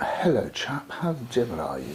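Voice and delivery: posh, well-spoken upper-class voice with swooping pitch. Retelling a friend's greeting on the stairs: imitating a well-spoken man. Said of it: "And that's how he spoke".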